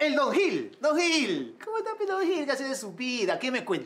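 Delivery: high, loud, exaggerated cheery tone.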